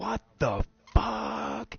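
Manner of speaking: very high, loud, raspy, rough outburst. Retelling startling a stranger in a store: retelling a loud outburst. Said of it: "I just real loud went".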